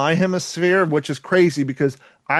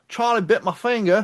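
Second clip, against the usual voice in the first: put-on Australian accent, slightly higher pitch; 5 semitones higher than usual. Speakers joke around with a phrase; one lapses into a put-on Australian accent. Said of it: "I went Australian".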